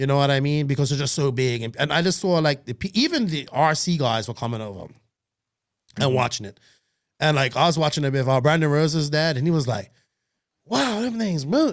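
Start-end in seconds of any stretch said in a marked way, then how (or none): 10.7-11.7 put-on Texas accent, pitched up. Retelling how Brandon Rose's dad reacted while watching, imitating a Texas accent. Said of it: "he's got a Texas accent".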